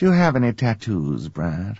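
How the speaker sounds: put-on gracious phone voice. Play a character based on your mom, speaking to brad in your mom's gracious telephone voice. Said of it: "it was sort of her telephone voice".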